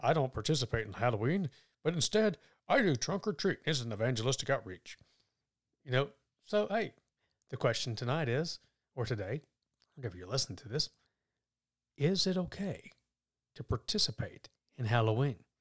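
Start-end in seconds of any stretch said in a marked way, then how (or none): 0.0-5.0 put-on pious, churchy tone. Asking whether it's okay to practice Halloween, quoting some people in a religious voice. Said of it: "I'm going to put on my religious voice".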